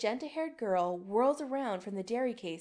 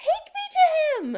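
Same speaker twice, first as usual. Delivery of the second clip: very high, very loud, shrill screeching; 12 dB louder than usual. A girl confronting Chris demands he take her somewhere: screeching. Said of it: "she screeches".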